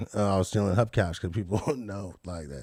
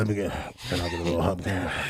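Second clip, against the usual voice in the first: very deep, slimy put-on voice; 2 semitones lower than usual. Showing the others his roleplay character's voice: real deep, slimy voice. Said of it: "It's real deep and, like, slimy".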